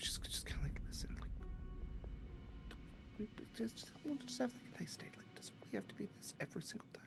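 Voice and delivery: very quiet, fast, hushed whisper. Acting out a scene where she pulls his arm in, retelling a whisper. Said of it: "she whispers to him".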